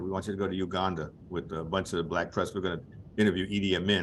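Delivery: ordinary delivery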